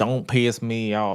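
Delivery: put-on country accent on the line. Quoting a man's threat, imitating a country accent. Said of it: "with that country ass accent".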